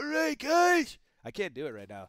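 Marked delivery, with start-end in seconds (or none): 0.0-1.0 put-on very high, shrill, very loud grandpa voice. Asked to do the grandpa impression before playing Fortnite, speaker does a grandpa impression. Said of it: "do the grandpa impression".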